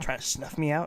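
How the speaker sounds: barely audible, hushed whisper. A woman speaks to someone who snuck up on her, almost inaudible whisper. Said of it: "Her voice becomes almost inaudible".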